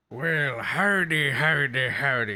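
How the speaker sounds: fake, put-on pirate accent. Opening greeting for more D and D, in a put-on pirate accent. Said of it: "It's weird saying howdy in a pirate accent".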